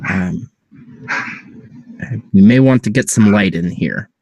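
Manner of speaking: hushed whisper. Playing a character speaking to the group, whispering. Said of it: "I'm gonna just kind of whisper to the group".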